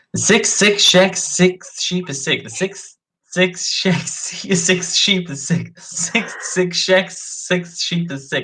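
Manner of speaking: slow, high hiss on s sounds, like a snake. Saying a tongue twister aloud, hissing like a snake. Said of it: "I'm just like hissing like a snake right now".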